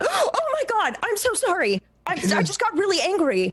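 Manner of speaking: high, swooping, flustered, frantic and panicked. Playing a character who slapped someone and then freaks out: freaking out after a slap. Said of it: "she's gonna slap you and then freak out".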